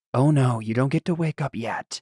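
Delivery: whispered character voice. Describing a nightmare scene, speaking Vanthus's line to the listener: whisper as Vanthus. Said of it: "he whispers like".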